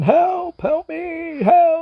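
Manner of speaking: mock, very high, very slow, drawn-out scream. Retelling what a person down below is screaming: imitating someone screaming for help. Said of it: "It's like screaming, like the guy's going".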